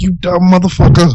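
mock screaming, very high-pitched. Retelling staying calm outside while inside his head, imitating screaming at himself. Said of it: "I'm fucking screaming at myself".

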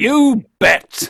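high, loud, curt and controlling. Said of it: "And he goes".

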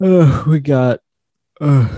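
slow, loud words spoken through a yawn. Host opening the show a week after Thanksgiving, talking mid-yawn. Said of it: "I started talking mid yawn".

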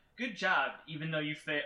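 ordinary talk

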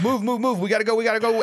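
high, fast, hurried urgent-sounding call.

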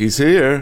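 overly cheerful, slightly quavering. Voicing a character announcing an arrival: too cheerful with a slight quaver. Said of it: "declares too cheerfully, but with a slight quaver".

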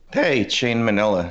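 voice breaks, cracking. After being introduced, the speaker greets the audience: voice cracking. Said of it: "my voice just cracked there".

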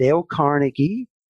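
put-on American accent, name pronounced the American way. Telling a history story, saying a name in an American accent. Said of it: "that's my American accent".

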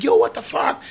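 mock high-pitched, startled shouting yell. Telling a story, the speaker acts out a man yelling at people in his car, retelling a yell. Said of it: "he yells at them like".

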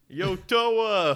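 very loud, very high holler, one word drawn out. Joking about a movie character, Rocky voice. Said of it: "It sounds just like Rocky".

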